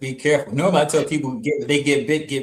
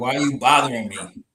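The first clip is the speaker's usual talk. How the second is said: grumpy, irritated put-on snake voice. Watching a snake huff, voicing it: put-on annoyed snake voice. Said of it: "you sound pissed. Like".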